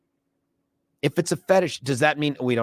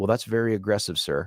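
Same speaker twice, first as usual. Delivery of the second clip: plain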